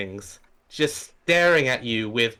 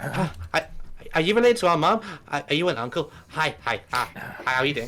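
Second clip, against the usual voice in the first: put-on excited young dragon voices; 2 semitones higher than usual. Voicing two very young dragons who rush up excitedly. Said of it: "they come scampering up to you".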